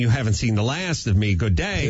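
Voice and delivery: ordinary talk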